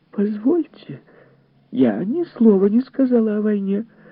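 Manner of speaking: very high, exclaiming outcry. Mrs. Phelps, replying to a man's complaint about the women's talk, exclaims. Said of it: "воскликнула миссис Фелпс".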